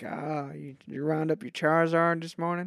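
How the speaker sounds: put-on Texan accent. Imagining a Pokémon show set on a Texan ranch, the speaker does a Texan rancher accent. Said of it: "it's just like a Texan ranch".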